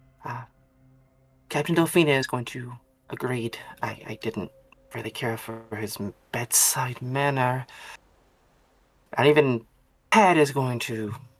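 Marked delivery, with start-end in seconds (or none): 3.8-7.7 hushed whisper in a character voice. Voicing a patient who complains quietly behind a closed door: whispering in character. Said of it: "sort of just whisper".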